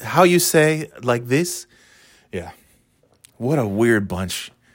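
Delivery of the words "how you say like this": put-on fake Spanish accent, higher. Imitating how Hilaria talks after visiting Spain: Hilaria's fake Spanish accent. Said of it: "now she talks like".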